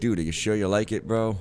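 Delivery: ordinary delivery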